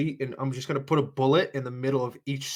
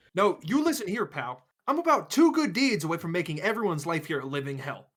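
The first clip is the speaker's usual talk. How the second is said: shouty, worked-up, swooping, heated yelling; 4 semitones higher than usual. Threatening the others in character: yelling. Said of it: "as he's yelling".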